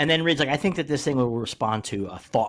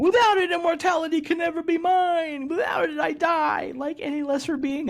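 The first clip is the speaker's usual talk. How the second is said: put-on, very high sobbing, crying wail. Retelling a comic scene where Annihilus loses his control rod: mock crying as Annihilus.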